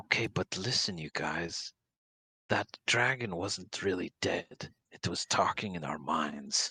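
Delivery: hushed conspiratorial whisper. Voicing a character who gathers the group close: whispering in character. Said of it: "gesture everybody in for more of a whisper".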